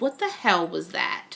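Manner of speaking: ordinary talk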